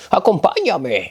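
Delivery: exaggerated croaky, hoarse, cracked old crone voice. Storyteller voicing an old crone speaking to Semele, in a hoarse, cracked voice. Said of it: "Pongo más o menos esta voz para que os imaginéis la voz".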